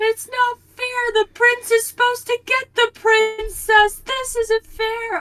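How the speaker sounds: put-on very high, loud, sobbing kid's voice. Retelling watching Aladdin as a kid with a stepmom: imitating own childhood sobbing. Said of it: "I'm sobbing".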